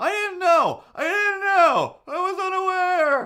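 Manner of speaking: very high, loud, distinct defensive voice. Retelling what a man in a car said: imitating a man protesting. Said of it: "a man voice very distinctly going".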